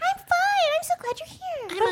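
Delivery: very high, silly cartoon-animal voice. Answering a greeting as Dahlia, Dahlia's animal voice. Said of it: "All animals talk like this".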